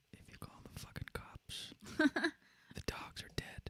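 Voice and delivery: very quiet, close, creepy, menacing whisper. Playing a kidnapper in a joke bit, menacing whisper. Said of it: "whispering is so creepy".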